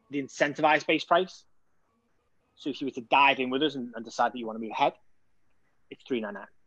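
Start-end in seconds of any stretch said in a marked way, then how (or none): 5.9-6.5 slightly lowered, softer tone. Displaying the actual offer price, in a slightly lowered tone. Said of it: "You just lower your tone a little bit when it comes to displaying the actual offer".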